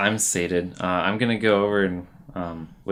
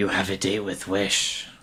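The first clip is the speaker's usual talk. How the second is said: hushed, soft whispering; 4 dB quieter than usual. Whispering into a sleeping character's ear: whispering in a sleeper's ear. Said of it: "I'm gonna whisper into Alika's ear".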